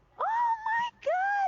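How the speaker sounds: shrill shriek, very high and very loud. Retelling how the manager screamed at the sales report: imitating manager screaming. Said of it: "she started screaming like".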